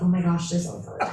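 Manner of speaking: normal talking voice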